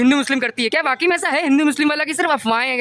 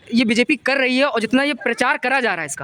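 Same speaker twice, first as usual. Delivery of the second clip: ordinary talk, nothing marked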